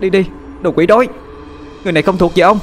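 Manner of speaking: shrill, very high, piercing yell. Reading a story, A Nhĩ shouts at the narrator's grandfather: A Nhĩ's shrill shout. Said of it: "cất cái giọng lanh lảnh mà quát lên".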